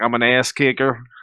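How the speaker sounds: laid-on, put-on Minnesota accent. Explaining the earlier voice to the others: Brock Lesnar impression. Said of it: "that was Minnesota Brock Lesnar. He's like".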